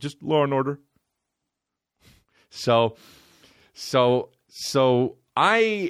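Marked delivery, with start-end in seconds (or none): 0.0-0.8 acted choked-up, weepy, sobbing voice. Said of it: "he cries at the end".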